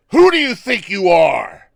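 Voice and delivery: very loud, booming, swooping wrestling-promo bellow. Interviewer putting the hardest question of the interview to the guest, in best wrestling voice. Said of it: "in my best wrestling voice".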